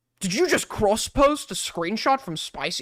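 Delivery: strict chat moderator voice. Complaining about Discord mods, the speaker imitates one questioning a user: impression of a Discord mod. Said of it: "I don't even know what I'm doing an impression of".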